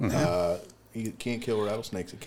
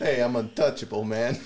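put-on snake voice with a Chicago accent; 2 semitones higher than usual. In a laughing chat, voicing an imagined snake with a Chicago accent. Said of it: "a snake with a with a Chicago accent".

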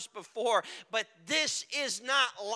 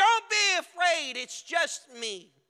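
mock high, drawn-out, carrying call; 6 semitones higher, 4 dB louder than usual. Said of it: "Jesus cries out".

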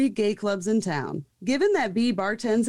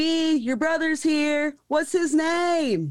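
high, drawn-out yell through a microphone; 6 semitones higher than usual. Retelling how someone on the microphone called across the club: imitating a yell into a microphone. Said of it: "yells to the whole club".

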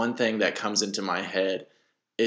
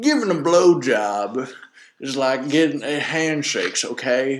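put-on Southern politician voice, higher and louder; 5 semitones higher, 4 dB louder than usual. Trying out an impersonation after the other speaker asks to hear it: Bill Clinton impression. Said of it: "working on a Bill Clinton im-, impersonation".

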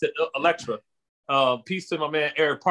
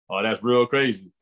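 nice deep voice, dropped low; 5 semitones lower than usual. Retelling a friend's reaction to teasing: imitating a friend's deep voice. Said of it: "just how he had that nice, deep voice".

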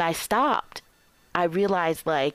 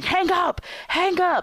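shrill, very high, loud screaming; 12 semitones higher than usual. Retelling him screaming at her: imitating someone screaming. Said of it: "he was screaming".

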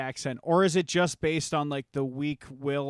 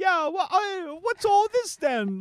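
very high, slow put-on British accent; 5 dB louder than usual. Retelling meeting a girl from high school at Walmart: imitating a girl's fake British accent. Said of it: "she had the accent".

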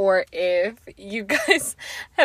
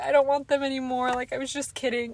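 put-on tearful pleading, higher; 5 semitones higher than usual. Retelling begging a parent to remove new braces: imitating her own past crying. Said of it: "crying, being like".

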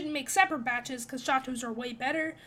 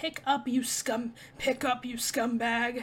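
gruff, menacing tone; 2 semitones lower than usual.

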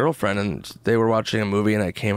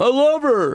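fake drunken sobbing, higher and louder; 5 dB louder than usual. Acting out the depressed cry guy when drinking: mock drunken crying. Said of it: "Why are you crying?".

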